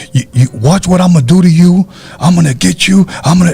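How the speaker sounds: put-on high, threatening man's yell, hollering. Retelling a man's voice they heard yelling: imitating a man yelling. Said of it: "all of like that type of voice".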